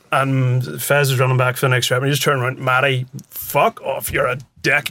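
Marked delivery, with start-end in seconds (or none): 2.5-4.1 put-on broad Belfast accent, slow. Retelling Stevie's outburst at Matty during a rep: Stevie's broad Belfast accent. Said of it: "in Stevie's broad Belfast accent as he does".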